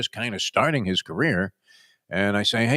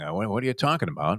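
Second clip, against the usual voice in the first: usual speaking voice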